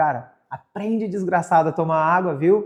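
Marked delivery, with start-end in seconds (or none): none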